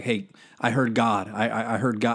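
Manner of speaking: ordinary talk, nothing marked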